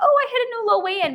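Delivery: very high, loud, super-excited gush. Replaying how they sounded in earlier videos, replaying past super excitement. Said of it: "I'm like super excited".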